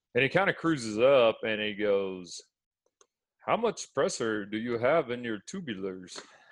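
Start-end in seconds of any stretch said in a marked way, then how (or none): 3.3-6.1 put-on German accent laid on heavy. Retelling what a man said when he cruised up, heavy German accent. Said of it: "heavy German accent going on here".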